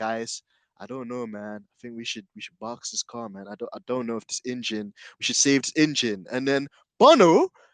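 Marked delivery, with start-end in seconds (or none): 0.0-4.9 acted, defeated, hopeless, dejected, disheartened voice. Retelling a driver's radio call when all seemed lost: imitating a disheartened voice. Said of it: "even in his very disheartened voice".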